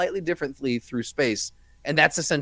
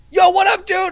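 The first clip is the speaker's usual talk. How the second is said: very loud, very high, super-excited voice; 10 dB louder than usual. Retelling a greeting from Doug: imitating Doug super excited. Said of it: "all caps and, like, super excited".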